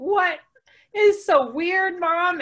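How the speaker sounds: put-on embarrassed, mortified child voices, high, very slow, drawn out. A mom retelling her kids' reaction to a race-medal Christmas tree; imitating mortified kids. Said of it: "my kids were mortified".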